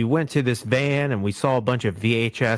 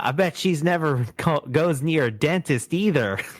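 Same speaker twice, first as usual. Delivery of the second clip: put-on, absolutely sassy, pitched-up delivery; 5 semitones higher than usual. Retelling a cartoon scene, quoting Shaggy's dig: imitating Shaggy's sassy remark. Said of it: "the start of Shaggy's just absolute sassiness".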